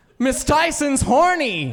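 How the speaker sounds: very high-pitched shout, suddenly blurted out. Retelling a childhood shout at a teacher in class: retelling own past shout. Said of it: "I just shouted out".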